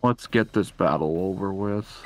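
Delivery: low, weary, worn-out, dead-tired voice. Speaker announces an anime impression, then starts a battle: tired commission official impression. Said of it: "an impression of that really tired public safety commission guy".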